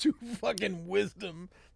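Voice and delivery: mocking, sneering tone. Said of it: "I read it like".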